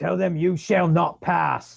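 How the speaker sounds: loud, rough, raspy yell. Playing a character in a game, yelling back to another character: yelling back. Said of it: "I'm gonna yell back to Issel".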